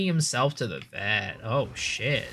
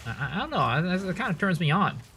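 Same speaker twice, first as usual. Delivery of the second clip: ordinary talk, nothing marked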